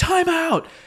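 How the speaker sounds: high, loud, booming yell. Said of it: "this booming voice like".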